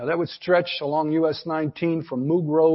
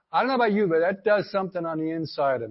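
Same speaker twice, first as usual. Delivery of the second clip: usual speaking voice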